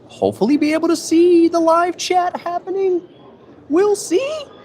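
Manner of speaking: very high, squeaky-pitched voice. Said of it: "You know I get serious when my voice goes up".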